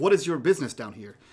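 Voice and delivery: stern, authoritarian, commanding officer voice. Voicing a soldier questioning a stranger: authoritarian tone. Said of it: "she has a very, like, authoritarian tone to her voice".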